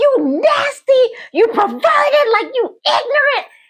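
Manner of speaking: acted very high, shrill yell. Retelling yelling at a man on the top bunk: imitating own yelling. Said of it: "they heard me yelling".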